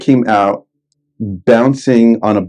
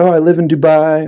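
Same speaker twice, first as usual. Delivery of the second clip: slight put-on Australian lilt, pitched up; 6 semitones higher than usual. Retelling what a girl met at Burning Man said: slight Australian accent. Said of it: "little Australian accent".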